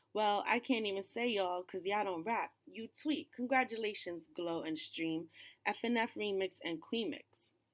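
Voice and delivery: ordinary talk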